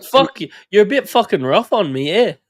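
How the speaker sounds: put-on very high-pitched, pretty awful English accent. Imitating a rugby player answering criticism, bad Pommy accent. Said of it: "that was a pretty bad Pommy accent".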